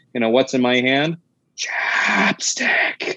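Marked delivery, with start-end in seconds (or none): 1.5-3.1 slow, drawn-out whispering creature voice. Speaker quotes a line from a movie in whispering Mothman voice. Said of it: "they get to say in the whispering Mothman voice".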